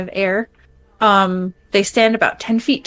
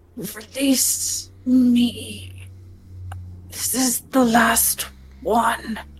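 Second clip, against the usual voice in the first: slow words pushed through gritted teeth; 3 semitones higher, 5 dB quieter than usual. Game master voicing a woman as the players approach her: through gritted teeth. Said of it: "with gritted teeth".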